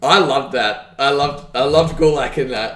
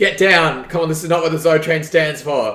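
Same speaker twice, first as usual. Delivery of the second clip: shrill, forceful, insistent arguing. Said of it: "argues with him to get off the top rope".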